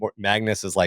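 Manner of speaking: ordinary talk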